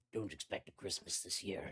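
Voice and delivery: gravelly beast voice, as if through sharp teeth. Narrating a scene where the biggest dire wolf speaks; gravelly dire wolf voice. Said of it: "in a gravelly voice past all those sharp teeth".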